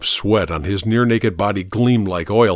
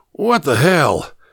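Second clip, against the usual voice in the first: croaking voice, dry coughs, much higher pitch; 7 semitones higher than usual. A thin man sitting up, squinting at the narrator, speaks in a croaking voice with dry coughs. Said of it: "He said in a croaking voice, broken by a series of dry coughs".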